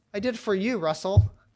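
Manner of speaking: put-on laughing while speaking. Retelling why a man joined the lawsuit, the speaker quotes him, imitating someone laughing. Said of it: "he stares at me and he starts laughing".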